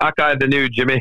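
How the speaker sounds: put-on Scottish accent. Repeating the line to the caddy during an Open Championship preview, in a Scottish accent. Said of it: "talking Scottish".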